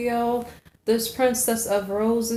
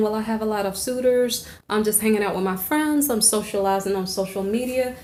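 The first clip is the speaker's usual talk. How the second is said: ordinary talk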